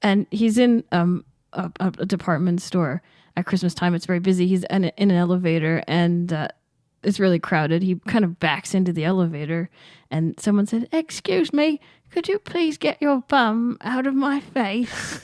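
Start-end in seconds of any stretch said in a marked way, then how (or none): 10.9-15.2 put-on tiny man's voice, little and much higher. Retelling a story about a crowded elevator, little tiny voice. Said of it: "this little tiny guy in this little tiny voice".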